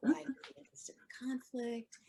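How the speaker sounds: imitated nervous tone. Retelling a talk with a teacher, imitating a nervous reaction. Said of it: "gets nervous, like".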